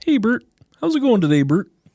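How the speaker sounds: very high-pitched puppet-like character voice. Explaining which voices you've been told you do well, Ernie voice. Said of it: "you can do Ernie".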